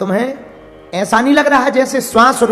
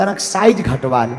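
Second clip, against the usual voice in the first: soft, hushed half-whisper, close to the ear; 9 semitones lower, 3 dB quieter than usual. Telling the story, narrator voices Ravana speaking into Brahma's ear: half-whispering in his ear. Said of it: "बोला धीरे से कान में".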